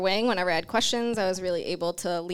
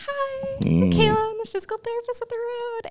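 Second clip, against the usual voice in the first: very high, jittery, swooping nervous voice. Physical therapist recalling introducing herself at a doctor's office, imitating her nervous phone voice. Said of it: "Did you notice how high pitched voice got right there?".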